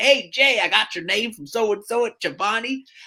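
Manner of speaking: thick Southern twang, laid on heavily. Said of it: "he's got this thick Southern twang".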